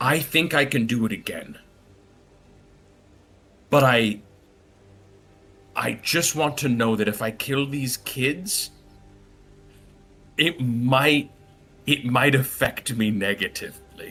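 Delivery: hushed whisper. Storyteller voicing Byron as he whispers to the adults, Byron whispering. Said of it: "And he whispers to the adults".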